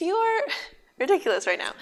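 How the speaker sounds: high, sing-song, laughing through the words. Retelling how she yelled and held the door shut, retelling laughing while talking. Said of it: "I'm just kind of laughing".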